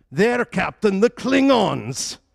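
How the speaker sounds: clumsy bad Scottish accent, very high, shrill and booming. Answering the captain in a quoted scene, bad Scotty accent. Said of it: "my Scotty accent needs work".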